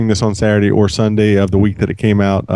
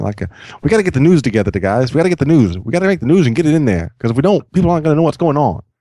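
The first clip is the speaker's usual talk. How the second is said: 1950s movie accent, pitched higher; 6 semitones higher than usual. Speaking to his audience, he suddenly slips into a 1950s movie accent. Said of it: "I suddenly want to always do a 50s movie accent".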